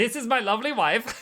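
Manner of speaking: put-on thick Czech accent. Quoting their old maintenance guy, in a thick Czechoslovakian accent. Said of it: "He had a very thick accent".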